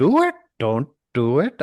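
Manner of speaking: sweeping rising-falling pitch. Asked to try a Yoda voice, the speaker attempts it: Yoda voice. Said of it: "do it in a Yoda voice".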